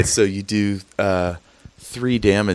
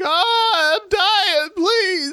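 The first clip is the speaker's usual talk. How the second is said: very high, very slow, drawn-out desperate scream. Voicing an old man screaming at a player for help: old man screaming for help. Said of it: "You hear the old man screaming at you for, for help".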